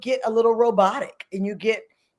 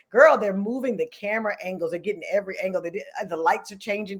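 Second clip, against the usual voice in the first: ordinary talk, nothing marked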